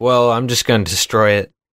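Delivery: ordinary delivery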